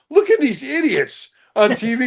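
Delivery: put-on, high-pitched yelling, pitched way up. Retelling yelling at people on TV at home: imitating own yelling at TV. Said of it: "who are you yelling at?".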